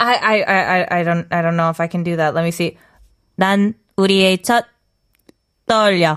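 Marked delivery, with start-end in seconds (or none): 3.4-6.2 very slow, mechanical robot-style voice. Reading a korean line after being asked to try it: robot voice. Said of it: "try to be a robot".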